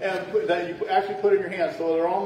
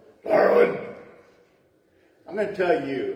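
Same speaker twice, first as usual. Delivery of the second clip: low, very gruff fatherly voice; 5 semitones lower than usual. Retelling a phone call from the father-in-law, imitating gruff father-in-law. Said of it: "he had a real gruff voice".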